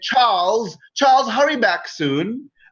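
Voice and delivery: high, calling woman's voice, distant. Game narrator voicing an offstage woman calling from the next room: woman's voice calling. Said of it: "a woman's voice in the next room".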